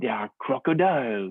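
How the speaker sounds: put-on French accent. Retelling a conversation about a beaver, quoting a woman's reply, French accent. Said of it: "I'll stop doing the French accent".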